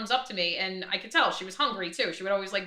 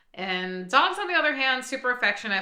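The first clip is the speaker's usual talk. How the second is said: plain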